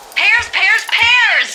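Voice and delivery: high, loud, triumphant shout.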